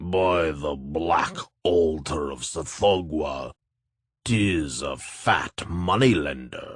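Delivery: thick, loathsome voice. Reading a monster speaking to a frightened moneylender: thick and loathsome voice. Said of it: "speak in a thick and loathsome voice".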